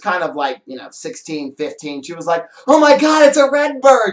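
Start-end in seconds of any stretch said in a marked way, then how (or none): 2.7-4.1 play-acted, very high, loud, thrilled teen gush. Retelling a girl's reaction at a farmer's market: imitating an excited girl. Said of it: "She was all excited".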